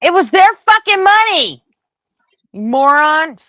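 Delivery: shrill, very loud, very slow, drawn-out furious bellow. Reacting to a played clip about cash sent abroad: yelling angrily. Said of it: "I didn't mean to yell".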